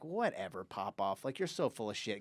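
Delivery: mock dismissive scoff. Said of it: "and we're like".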